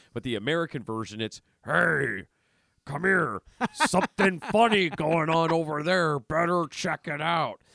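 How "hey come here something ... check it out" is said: slow, drawn-out dubbed monster voice. Describing the American version of Godzilla, the speaker does the dubbed Godzilla voice. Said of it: "I hope that's the exact voice that they used".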